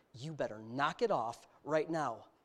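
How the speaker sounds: low, stern, fatherly dad voice. Father retelling how he warned his son, in his changed dad voice. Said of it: "he knows when Dad changed his voice".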